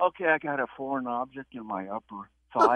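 hushed, quiet, discreet aside. Retelling what he told the lady in a full waiting room, retelling a quiet, discreet remark. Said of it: "trying to say very quietly and discreetly".

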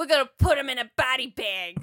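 New York Italian gangster accent. Quoting a bad guy's line: imitating italian gangster accent. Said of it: "weird New Yorker, Italian gangster accent".

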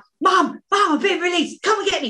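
play-acted very high, shrill, high-pitched screaming. Telling how they phoned their mum after being released: retelling a scream. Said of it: "screamed at her".

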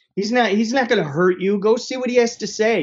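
mock screaming shout, high-pitched and loud. Retelling how a father answered news of an investor: imitating a father screaming. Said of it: "He screams".

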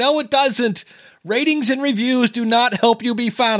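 high-pitched, full-throated mock screaming. Retelling screaming at the car dashboard over a podcast's bad advice: retelling screaming at the dashboard. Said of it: "I'm screaming at my dashboard".

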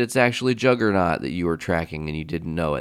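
normal talking voice

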